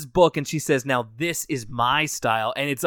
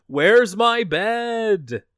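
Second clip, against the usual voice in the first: high acted yell with "bed" drawn out; 8 semitones higher, 3 dB louder than usual. Retelling a cartoon scene, imitating Francine yelling. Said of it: "she just yells into the echoing maw".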